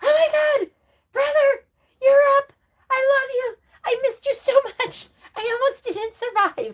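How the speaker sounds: very high, overjoyed, gushing excited dog voice. Imagining what the excited dog would say to someone who just got up: voicing Momo the dog. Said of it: "If Momo could talk, he'd be like".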